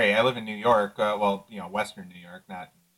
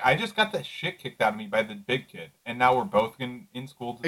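ordinary delivery

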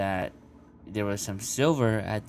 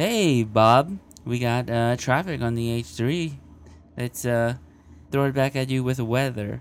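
loud, fast AM radio top 40 DJ patter; 4 semitones higher, 8 dB louder than usual. Trying new microphone settings, the speaker slips into a radio DJ voice. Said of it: "I think I sound more like a radio DJ".

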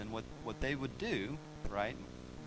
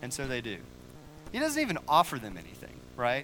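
ordinary delivery

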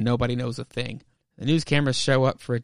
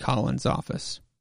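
usual speaking voice

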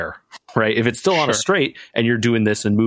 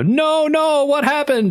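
very high, very slow, drawn-out panicked yell. Retelling a driver's words on the radio: imitating a driver yelling. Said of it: "yelling on the radio".

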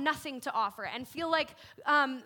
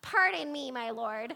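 goofy, silly voice, slow and drawn out; 3 semitones lower than usual. Reading a line from Judges six as Gideon: goofy Gideon voice. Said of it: "who talks like that?".

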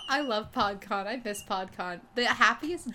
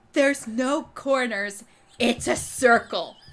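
loud, raised shout; 2 semitones higher, 6 dB louder than usual. Speaker retelling what Emily screamed over the telephone: retelling Emily screaming. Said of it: "And then Emily screams over the telephone".

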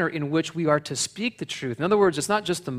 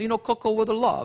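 put-on Italian accent of an old grandmother, pitched up; 6 semitones higher than usual. Speaker repeating his grandmother's saying to Vincenzo, imitating Concetta. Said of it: "I sound like Concetta now".

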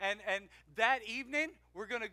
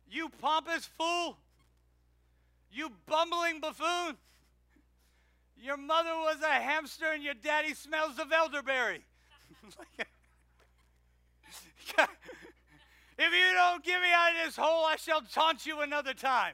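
loud, high, jeering mocking yell; 6 semitones higher, 7 dB louder than usual. Retelling a Bible story as a Monty Python joke, the speaker voices Daniel; retelling a mocking yell. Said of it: "And Daniel yelled back".

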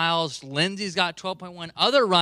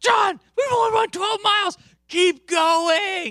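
very high-pitched, raised yell; 14 semitones higher, 5 dB louder than usual. Retelling how his partner yelled to him during a half marathon, retelling a yell. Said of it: "as soon as she yells".

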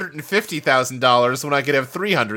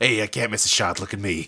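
put-on muttered aside, lower in pitch; 5 semitones lower, 4 dB quieter than usual. Discussing a film scene where he plays pool while interrogating, Peter Falk muttering under breath. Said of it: "muttering under his breath".

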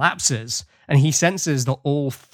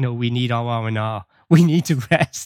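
put-on pleading tone; 2 semitones lower than usual. Recapping a story, acting out a character's protest against new orders, retelling someone pleading. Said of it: "Kirk still pleading like".

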